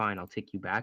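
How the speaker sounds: normal talking voice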